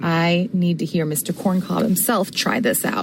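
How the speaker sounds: ordinary talk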